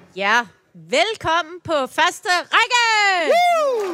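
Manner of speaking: glad, high, swooping, drawn-out cheer. Opening a live broadcast, shouting gladly. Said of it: "Jeg råber og klapper og er glad".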